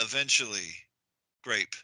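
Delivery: "grape" quiet, flat falling tune, not rising.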